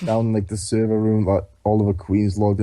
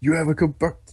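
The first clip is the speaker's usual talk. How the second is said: exaggerated put-on menacing tone, higher; 6 semitones higher than usual. Retelling a scene in which a character threatens another: exaggerated menacing threat, put on. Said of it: "Didn't say it like that".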